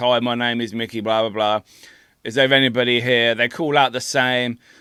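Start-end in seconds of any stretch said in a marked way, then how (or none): none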